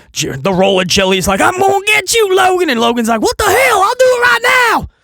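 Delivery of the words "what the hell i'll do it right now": put-on thick Southern US accent, very high-pitched. Recapping a wrestling brawl, quoting Logan Paul's reply, with a southern accent. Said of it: "he just went really southern".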